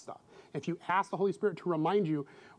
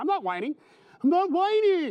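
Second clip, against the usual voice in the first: put-on very shrill, sing-song, swooping, very high child's whine; 10 semitones higher, 6 dB louder than usual. Retelling how the kids denied it: imitating a whining child. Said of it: "They couldn't hear that they were whining".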